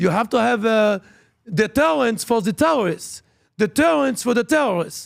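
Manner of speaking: put-on Israeli accent. Retelling what an Israeli Navy SEAL said in a discussion, thick Israeli accent. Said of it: "the Israeli guy with the thick accent".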